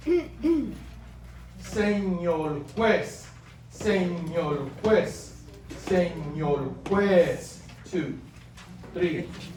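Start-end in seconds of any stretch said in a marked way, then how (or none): 1.6-7.6 very slow, drawn-out reading aloud. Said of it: "I'm gonna read it slowly now".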